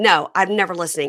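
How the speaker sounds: plain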